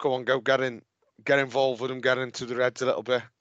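ordinary delivery

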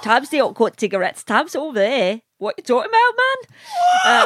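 Newcastle accent, very high, sing-song, swooping. On a podcast, showing the co-hosts a Newcastle accent. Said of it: "I can talk in Newcastle".

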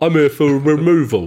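put-on London tough-guy accent. Recalling a line later posted on Twitter: London thug accent. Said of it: "in my best sort of London thug accent".

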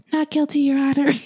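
put-on high little baby voice. Speaker recounts a defendant's plea in court, imitating Alexis's baby voice. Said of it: "She pleads not guilty in a baby voice".

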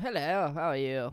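put-on British fighter pilot voice. Doing an impression on request: British RAF ace pilot impression. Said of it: "do me your best impression of what a British R A F ace pilot sounds".

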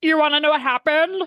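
odd, strange frog voice. Imitating a woman in a preview, asked about what happened in Vegas, in a weird Kermit the Frog voice. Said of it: "It's this weird Kermit the Frog voice".

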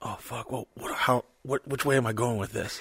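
soft, quiet, nervous low-key panic. Retelling own thoughts right before starting the show: imitating own panic. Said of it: "I kinda low-key panic, going".

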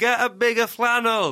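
high, heckling, barracking shout. Recalling a front-row heckler at a nearly empty arena show, imitating him shouting. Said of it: "kept shouting".

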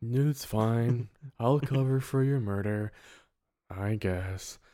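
put-on gloomy voice, low, slow, drawn out, mopey. Recapping a movie scene, voicing a son reassuring his mother, Eeyore-like mock-gloomy voice. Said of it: "It's kind of Eeyore a bit there".

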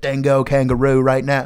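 put-on loud Australian accent, commanding officer voice. Retelling what the base's commanding officer said: Australian accent. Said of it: "I have his Australian accent".

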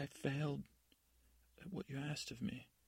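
crying with racking sobs. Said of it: "She's crying, racking with sobs".

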